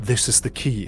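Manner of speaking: very gentle, soft half-whisper. Narrating a scene where a female voice half-whispers to the listener: gentle half-whisper. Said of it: "A very gentle voice that says".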